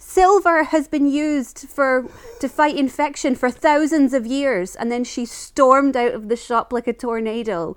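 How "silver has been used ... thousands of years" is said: sudden, high-pitched shouted outburst. Retelling what a woman shouted before storming out of the shop: retelling a shout. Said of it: "she just literally shouted".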